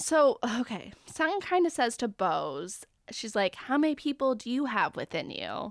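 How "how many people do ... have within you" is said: ordinary talk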